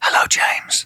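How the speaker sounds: very soft whisper under the breath. Answering a whispered greeting as a bit: whispering. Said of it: "that is a very good whisper".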